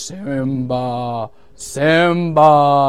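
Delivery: deep, very low, drawn-out ghostly voice. Retelling the movie scene where Simba's dad's ghost calls him, imitating the ghost. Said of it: "he sounds like this".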